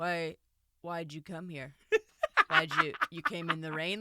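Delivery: put-on suspicious interrogating tone. Retelling how a film character questions his wife at the door: imitating an interrogating tone. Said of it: "interrogating her".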